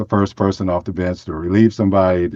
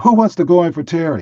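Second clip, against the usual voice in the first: very high-pitched shout; 10 semitones higher than usual. Retelling how the upset coach yelled at the bench: imitating a coach yelling. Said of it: "he yelled again".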